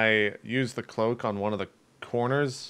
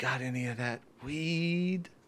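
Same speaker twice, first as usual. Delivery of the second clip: hushed disguised mutter under breath, weed drawn out; 3 semitones higher, 7 dB quieter than usual. Speaking in character to a hidden listener: disguised voice under breath. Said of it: "under my breath and, and change it so that you can't recognize it's my voice".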